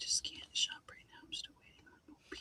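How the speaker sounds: hushed, breathy whisper beneath other talk. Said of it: "Becca likes to whisper sometimes too".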